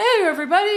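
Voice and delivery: showy hype-host voice, very loud and very high. Mocking a typical speaker addressing a crowd: imitating an overly performative speaker. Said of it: "super performative".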